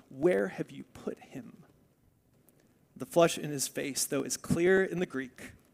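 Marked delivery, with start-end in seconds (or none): 0.2-1.5 mock-angry speech through gritted, clenched teeth. Retelling a question asked in anger, acting out speaking through gritted teeth. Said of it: "Jesus is speaking through gritted teeth when he asks".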